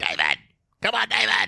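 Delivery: very deep, low, rumbling put-on voice. Imitating an actor's line from a film: Harvey Fierstein voice. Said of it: "I only do his voice".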